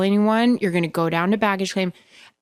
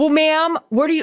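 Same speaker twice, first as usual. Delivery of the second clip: acted, high, impatient, demanding screaming; 10 semitones higher, 4 dB louder than usual. Retelling a flight attendant screaming at a woman who couldn't remember, retelling screaming. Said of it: "started screaming like".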